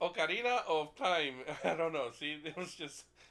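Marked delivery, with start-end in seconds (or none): 0.0-1.3 loud put-on Spanish accent with a little spice. Naming Zelda games with friends, the speaker says a title in a Spanish accent. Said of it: "you're just saying things in a Spanish accent".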